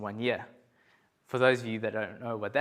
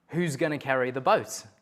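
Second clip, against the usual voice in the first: ordinary talk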